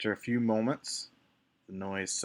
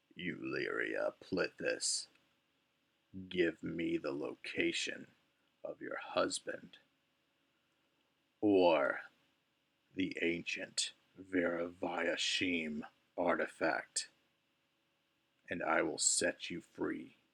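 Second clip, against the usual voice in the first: low, creaky, creaking voice; 3 semitones lower than usual. Narrating to players as a voice demands answers from euleria, low, creaky voice. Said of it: "a low, creaky voice".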